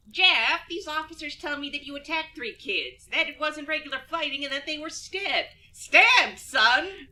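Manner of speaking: bad, lousy cartoon-mom voice. Acting out a parent confronting her son, in a crappy Marge Simpson voice. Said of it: "sort of crappy Marge Simpson voice".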